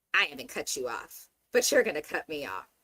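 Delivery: put-on condescending, superior, lecturing talking-down tone. Retelling what a man on a show said to Nikki: imitating a condescending remark. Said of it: "he condescendingly said to Nikki".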